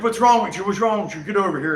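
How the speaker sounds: play-acted rushed, alarmed, fast, agitated delivery. Retelling how airport security agents reacted to his shaking: imitating agitated TSA agents. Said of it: "the T S A is freaking out".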